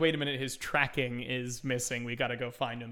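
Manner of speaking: ordinary talk, nothing marked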